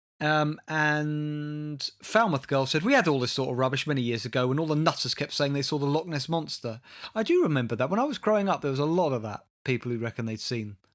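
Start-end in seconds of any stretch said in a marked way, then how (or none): none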